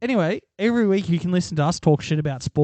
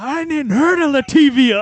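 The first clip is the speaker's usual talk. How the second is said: very high, loud, furious, drawn-out ranting yell; 10 semitones higher, 7 dB louder than usual. Retelling a sports fan raging at his TV: imitating a fan yelling at TV. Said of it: "Just going apeshit at his telly".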